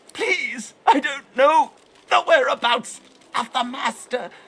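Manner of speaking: put-on high, strangled, pitiful wheezing voice. Narrator reads Stingtail, held in a grip with fear-smothered eyes: pitiful wheeze, tightened throat. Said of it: "his voice a pitiful wheeze through his tightened throat".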